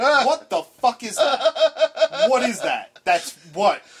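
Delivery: play-acted furious outburst, high pitch, drawn out. Acting out a reaction to a strange word in a book: acting out own angry reaction. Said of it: "I get this angry. Like, this is my reaction".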